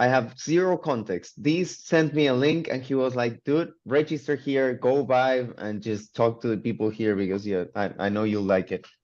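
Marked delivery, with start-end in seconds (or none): none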